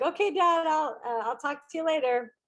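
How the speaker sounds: high, crying voice, words pushed through tears. Retelling a phone call with Dad during an emergency: retelling own crying words. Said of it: "I'm crying now".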